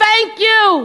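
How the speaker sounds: lone high-pitched yell calling out. Retelling a crowd member who yells: imitating someone yelling. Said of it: "someone from the far right yells".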